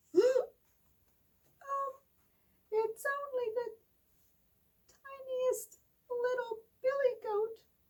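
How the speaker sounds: tiny, very high, very slow, drawn-out little voice. Reading the fairy tale, the youngest goat answers the troll in a very small voice. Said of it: "in his very small voice".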